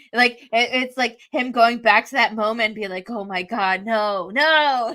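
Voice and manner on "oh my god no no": put-on very slow, sinking, dread-filled voice. Retelling him going back to that moment: imitating someone's dread. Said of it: "the dread".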